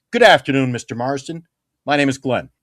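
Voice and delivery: self-assured masculine voice. Showing how to introduce yourself confidently with a firm handshake. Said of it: "They teach you how to be a man".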